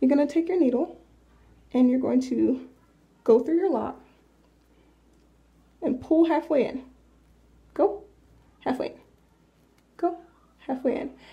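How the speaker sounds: soft, slight whisper. Showing how to crochet a lock close to the speaker: whispering a bit. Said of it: "I'm kinda whispering 'cause".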